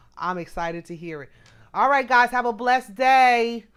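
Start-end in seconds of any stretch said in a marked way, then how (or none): 1.7-3.6 loud yell drawn out slowly. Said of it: "I'm sorry for yelling".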